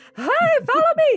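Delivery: hollering, loud yelling. Voicing a character luring beasts away: hollering to lure monsters. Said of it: "hollering, like".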